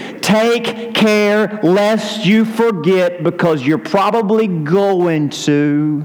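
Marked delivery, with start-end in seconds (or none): 0.0-3.2 very slow, deliberate, clearly enunciated word-by-word delivery. Quoting a scripture warning to listeners, very slowly and clearly. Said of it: "Let me say this very slowly and very clearly".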